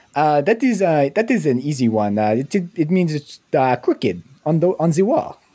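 Quebec French accent. A player explains what a phrase means, in a quebec french accent. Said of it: "I got to do it in my Quebec accent".

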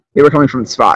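ordinary talk

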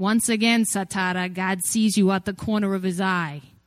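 put-on heavy, over-the-top, impossibly thick Brooklyn accent. Recounting a movie scene, quoting the servant's line in Jacopo's Brooklyn accent. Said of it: "impossibly Brooklyn accent".

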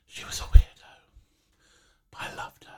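hushed, secretive whisper. Describing an old friend as if she stood behind: whispering. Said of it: "I'm whispering".

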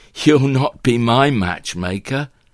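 slightly coy and lightly teasing. Sarah replies to Bernard about Bertie joining the shoot, slightly coy. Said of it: "replies Sarah slightly coyly".

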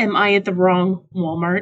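plain

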